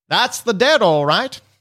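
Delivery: put-on old man voice. She speaks as the old man you were talking to, old man voice. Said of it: "she says it in the voice of the old man".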